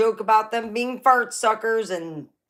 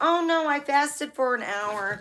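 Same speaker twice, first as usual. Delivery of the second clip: put-on know-it-all tone, high and smart-sounding; 6 semitones higher than usual. Retelling how someone answered the grandmother: imitating someone acting smart. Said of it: "like she was real smart".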